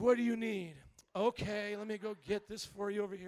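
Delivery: mock grudging, put-upon voice. Retelling slow service on coffee and a donut, imitating the server acting like doing a favor. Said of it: "acting like she was doing him a favor".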